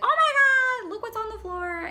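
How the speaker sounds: very high, loud shriek with oh stretched long. Retelling how a friend reacted to a dead bug: imitating someone screaming. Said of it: "She starts screaming".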